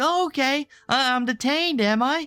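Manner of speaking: flustered, worked-up, mild stammering yell. Retelling a confrontation with a police officer: imitating Andrew yelling. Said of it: "Andrew just starts yelling at him like".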